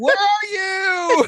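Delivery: very high yelled call, as down a hall. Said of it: "I'm yelling out his first name".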